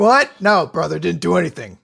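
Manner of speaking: brush-off, dismissive pro wrestler voice. Voicing a character who shrugs off a hit: Hulk Hogan voice. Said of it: "she Hulk Hogan's it".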